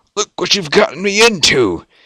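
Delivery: hissing, sibilant tone. Narrator reading a character's line in a story, hissed. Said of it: "Rincewind hissed".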